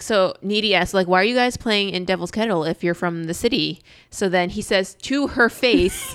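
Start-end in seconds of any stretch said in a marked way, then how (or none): none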